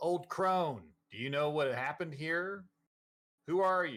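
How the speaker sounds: halting, hesitant delivery with some anger. A player's character calls out to an old crone, with some anger. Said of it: "with some anger in my voice".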